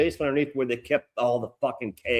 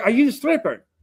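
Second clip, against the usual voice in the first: high-pitched, put-on Irish accent; 10 semitones higher than usual. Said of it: "her accent".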